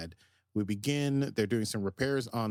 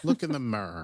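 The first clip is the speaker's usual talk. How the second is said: terrible, bad put-on Irish accent. Imitating a school friend who couldn't say the word, in a bad Irish accent. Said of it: "my Irish accent is terrible".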